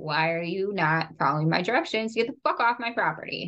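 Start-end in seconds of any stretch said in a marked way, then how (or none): none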